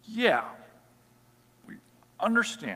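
high-pitched, unsure, hesitant voice.

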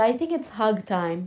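ordinary talk, nothing marked

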